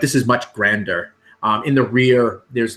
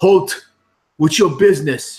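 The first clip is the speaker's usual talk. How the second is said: loud, high, shouted yell; 7 semitones higher, 5 dB louder than usual. Voicing a guard challenging approaching travelers: guard yelling. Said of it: "one of them yells out".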